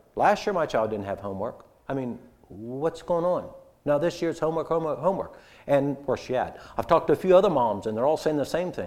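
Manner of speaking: concerned tone.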